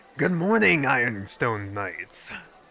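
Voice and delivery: low, growly sultry voice. Voicing a character greeting the ironstone knights: growly sultry voice. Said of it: "I'm gonna try to give him growly sultry".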